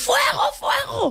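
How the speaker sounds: high, drawn-out shout.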